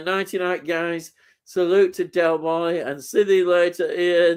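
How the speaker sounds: ordinary talk, nothing marked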